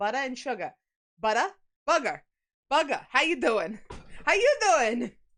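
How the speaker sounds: playing up a Long Island accent. A New Yorker showing how they sound, going a bit more Long Island. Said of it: "I go a little more Long Island".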